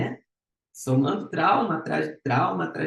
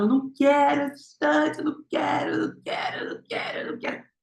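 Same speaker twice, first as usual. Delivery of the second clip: sobbing, wailing, very high crying; 10 semitones higher than usual. Reenacting their childhood self refusing a woman's choice; retelling a crying yell. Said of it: "eu chorava, eu gritava".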